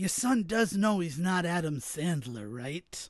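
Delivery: hushed, theatrical stage whisper. Speaker retells his father's remark to his mother, in a stage whisper. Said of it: "in that whisper speak, like a stage whisper".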